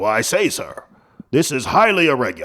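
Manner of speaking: put-on stuffy, haughty, pompous politician voice with swooping pitch. Mocking Republicans' reaction to an article: imitating haughty Republicans. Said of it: "these haughty".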